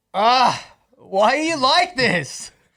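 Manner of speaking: sudden, high, loud yelled outburst. Doing another take, reliving the moment the sand spilled upstairs, yelling. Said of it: "I kind of yelled at it".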